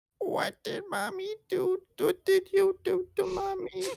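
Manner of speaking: put-on babyish voice, pitched as high as possible. Showing the others how the line was done, in a very high baby voice. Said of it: "I just talk as high as I possibly could".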